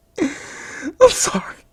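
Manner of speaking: high-pitched, choked-up sobbing on every word. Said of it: "voice is choking up".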